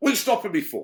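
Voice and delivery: shrill, very loud, high confrontational tone. Retelling how he usually answered police who stopped him: imitating his own confrontational tone. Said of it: "it's that confrontation".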